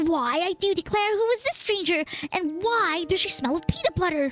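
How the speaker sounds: put-on dog voice. Voicing the dog Gretchen after correcting the voice: Gretchen's voice. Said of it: "that's not what she sounds like".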